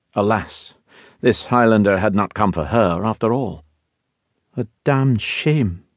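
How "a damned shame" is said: quiet murmur, pitched up. Narrator reads a woman reacting to the Highlander's claim, murmured to herself. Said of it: "she murmured to herself".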